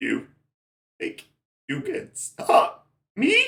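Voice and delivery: loud dragon voice, changed from before. Narrating a scene and voicing the dragon, in a changed dragon voice. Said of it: "he doesn't talk with the same voice as before".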